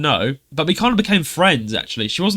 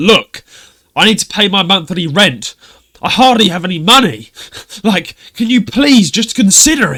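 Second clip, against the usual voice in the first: put-on slightly angry tone, louder; 5 semitones higher, 7 dB louder than usual. Quoting a man's follow-up message asking to reconsider, retelling a slightly angrier plea. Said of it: "like a bit more angry this time".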